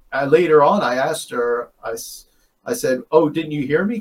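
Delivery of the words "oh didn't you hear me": ordinary talk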